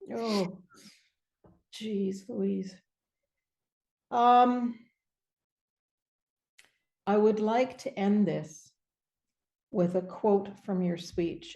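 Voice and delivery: tearful, choked-up, crying through the words. Speaker closing the conversation with the person they're addressing, crying while talking. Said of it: "I'm crying".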